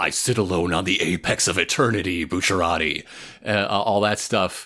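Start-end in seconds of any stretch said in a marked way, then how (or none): 0.0-3.0 low, fast bossy villain voice. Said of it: "he's the bossiest he's ever been".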